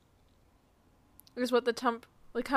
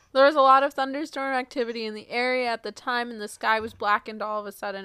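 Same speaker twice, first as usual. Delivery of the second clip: ordinary talk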